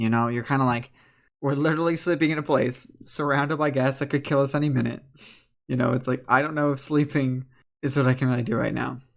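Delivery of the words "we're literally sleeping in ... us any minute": ordinary talk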